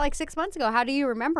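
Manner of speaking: ordinary talk, nothing marked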